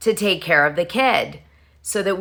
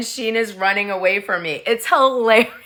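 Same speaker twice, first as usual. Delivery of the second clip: usual speaking voice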